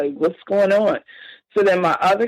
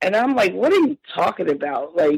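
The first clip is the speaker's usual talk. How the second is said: ordinary delivery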